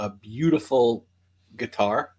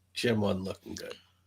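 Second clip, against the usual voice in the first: very hushed, quiet, secretive whisper; 2 semitones lower, 10 dB quieter than usual. Narrator relays what a woman whispers to the group: whispering. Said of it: "And she whispers".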